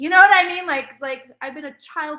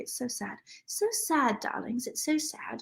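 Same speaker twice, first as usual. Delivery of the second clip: hushed, whispered, deliberately bad British accent; 11 dB quieter than usual. Chatting while getting drunk, slipping into a bad british accent. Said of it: "I have various very bad British accents".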